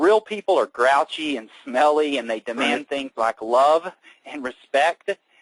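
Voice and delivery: ordinary talk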